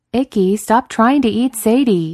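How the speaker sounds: loud drawn-out holler. Reading a story, a character hollers at a small dog gnawing a bigger dog: hollering. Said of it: "Daniil hollers".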